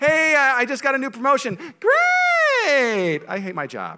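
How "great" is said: forced, very high, drawn-out fake enthusiasm. Showing someone faking delight at another's promotion news: forced high voice. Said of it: "High voice tells on you".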